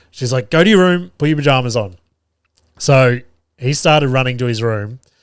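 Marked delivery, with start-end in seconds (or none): 0.4-1.9 irritated, angry, sharp snapped bark. Retelling another adult snapping at the child: imitating someone snapping angrily. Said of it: "Nikita ended up snapping".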